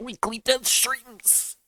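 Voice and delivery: faint, slow dying voice. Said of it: "I sound like I'm dying".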